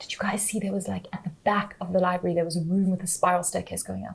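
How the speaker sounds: hushed, barely there, very quiet half-whisper. Player asks the other players a question in character, half-whispering. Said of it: "I'm whispering now".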